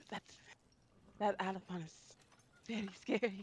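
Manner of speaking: whisper. Voicing a character who whispers to another character: whisper. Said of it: "Ayana will whisper to".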